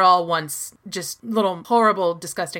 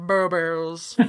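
'boobies' muffled, as if eggs in mouth; 2 semitones lower, 4 dB quieter than usual. Mimicking how a woman said one word: muffled 'boobies', mouth full. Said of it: "it's like she has eggs in her mouth".

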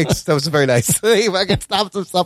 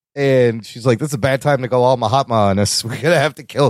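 ordinary talk, nothing marked

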